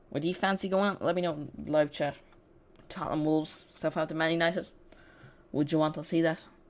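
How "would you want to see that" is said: bad, unintended Irish accent. Streamer asking live chat which match to show, slipping into a terrible Irish accent. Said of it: "That was a really Irish accent".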